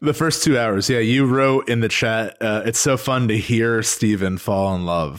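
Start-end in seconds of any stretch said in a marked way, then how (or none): none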